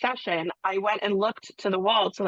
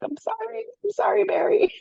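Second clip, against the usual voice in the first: mock very high, frightened, terrified little voice; 13 semitones higher than usual. Retelling apologizing to a man who was screaming: imitating own terrified apology. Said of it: "terrified of this giant man".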